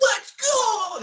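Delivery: very high, very loud, shrill shout. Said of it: "I just imagine it's so high-pitched".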